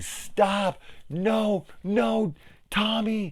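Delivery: very high, very slow, drawn-out pleading scream. Retelling how people react when the killer is bashed: imitating people screaming. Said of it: "the people just start screaming".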